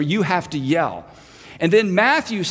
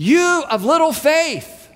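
put-on, good and loud, raised calling voice; 9 semitones higher, 3 dB louder than usual. Retelling the boat scene, answering the panicked men; retelling a loud call. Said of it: "And he says loudly".

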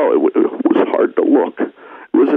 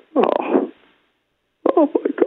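overwhelmed, gushing exclamation at very high pitch; 13 semitones higher than usual. A customer responds to a server offering him fries: getting emotional. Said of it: "I'm getting emotional".

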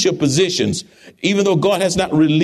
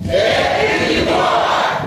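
very loud, at full volume. Addressing the audience, repeating the phrase after them, as loud as possible. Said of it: "as loud as you can go".

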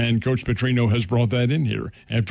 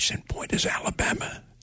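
hushed whisper, quieter. Giving an example during a discussion with others: whispering. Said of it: "I have to whisper that".

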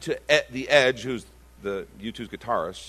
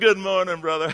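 put-on, mock Southern accent; 6 semitones higher than usual. Mocking families who turn sweet once they get out of the car, put-on southern accent. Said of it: "And they're Southern all of a sudden".

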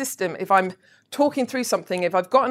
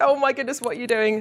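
mock, fast, rattled-off panicked outburst. Retelling own reaction on hearing someone shared a login: retelling own panic.

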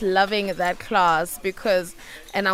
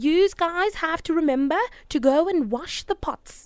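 put-on northern English Geordie accent, pitched up; 8 semitones higher than usual. Asked to say more in her accent, speaker quotes a woman in Geordie accent. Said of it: "Say a bit more in her accent".

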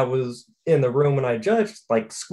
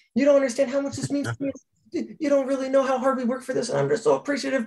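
very high-pitched, rushed, rattled-off fast speech; 12 semitones higher than usual. Speaker retells what a woman said to her, talking fast. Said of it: "she's talking fast".

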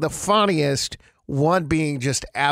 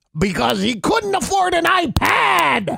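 put-on pirate voice, much higher; 12 semitones higher, 3 dB louder than usual. Delivering a pirate joke's punchline to a listener, in a pirate voice. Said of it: "I can't believe you're still doing that voice".

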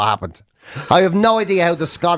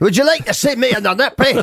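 amateur put-on Scottish accent, pitched up; 7 semitones higher than usual. Answering what Scots sound like: put-on Scottish accent. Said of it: "what do Scots sound like?".

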